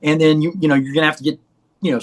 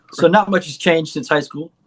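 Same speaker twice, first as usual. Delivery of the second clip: usual speaking voice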